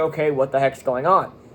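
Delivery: plain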